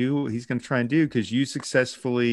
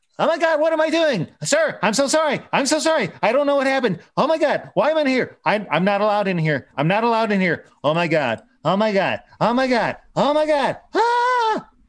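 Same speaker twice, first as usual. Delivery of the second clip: very high, loud, frantic, terrified elf voice; 11 semitones higher, 5 dB louder than usual. Voicing a terrified elf who wakes in a forbidden place: terrified elf, panicking. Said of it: "this little elf is just losing his goddamn mind in terror".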